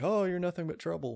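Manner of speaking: put-on whispery voice. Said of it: "Demi Moore to A S M R in that little line".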